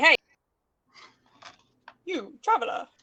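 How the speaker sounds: very loud, booming hailing shout. Calling out to an unmoving figure at the edge of darkness: shouting in character. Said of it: "I'm gonna shout at it and just say".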